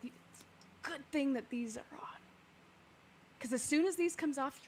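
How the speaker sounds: soft, muttered under-the-breath stage whisper. Voicing a character in a narrated scene, speaking aside: half-whispering under her breath. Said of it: "she whispers under her breath".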